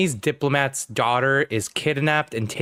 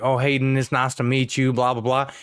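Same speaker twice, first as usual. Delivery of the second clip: put-on very strong Southern accent. Retelling how a fishing boat coworker greeted a friend: imitating a super Southern accent. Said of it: "a guy who was super Southern".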